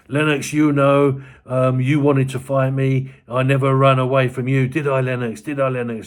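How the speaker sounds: goading, needling, angry taunting tone. Recounting a man shouting at another fighter: retelling angry shouting. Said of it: "he starts shouting at Lennox Lewis".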